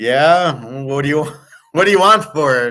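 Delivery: mock tone, words broken by laughter. Acting out a bank teller answering a Bitcoin trade: acted teller laughing while talking. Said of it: "She's gonna start laughing".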